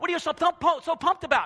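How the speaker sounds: high, loud, eager, fired-up voice. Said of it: "a church that's on fire is like".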